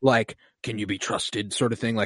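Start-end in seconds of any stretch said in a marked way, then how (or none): 0.6-1.5 hushed, frightened murmur, soft. Describing how a clone conveys fear through voice, imitating Slip's hushed fearful line.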